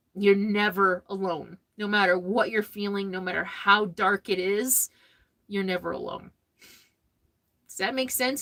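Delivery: crying through the words, tearful and breaking. Speaker addressing the audience, thanking them, crying. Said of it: "I don't know why I'm crying".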